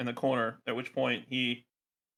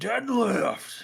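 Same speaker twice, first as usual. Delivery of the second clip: very high, raw, rough scream; 10 semitones higher, 3 dB louder than usual. Voicing a character who deadlifts a body and screams: screaming. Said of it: "just screams out".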